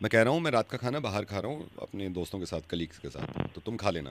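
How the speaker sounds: low, soft, hushed murmur.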